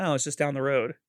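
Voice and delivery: ordinary talk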